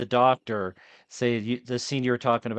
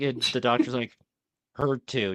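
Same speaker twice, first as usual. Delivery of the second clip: plain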